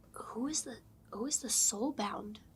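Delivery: whispering in character voice. Leaning over to ask a companion a question, out of guards' earshot: whispering. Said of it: "can I lean over to Bavo and whisper".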